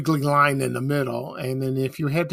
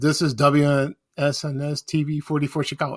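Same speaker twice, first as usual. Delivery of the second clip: ordinary talk, nothing marked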